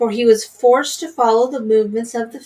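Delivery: ordinary delivery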